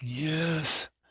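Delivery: begrudging, curt, short reluctant tone. Retelling own replies to a senior pastor: begrudging curt yes. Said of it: "I kept saying it just like that".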